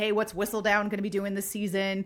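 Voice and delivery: plain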